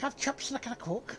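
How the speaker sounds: Scouse Liverpool accent. Showing how to do a Scouse accent by asking for chips: Scouse accent. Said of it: "If you wanna do Scouts".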